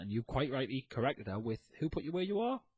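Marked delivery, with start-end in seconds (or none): 1.8-2.6 sarcastic, pointed, mocking tone. Retelling a reply to a commenter: sarcastic retort, retold. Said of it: "I sarcastically said".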